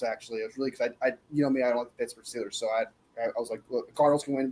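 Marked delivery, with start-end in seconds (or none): none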